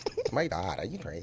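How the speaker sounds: put-on valley girl accent. Asked to do an american accent, the speaker offers a valley girl voice. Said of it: "I can only do girls from like the valley".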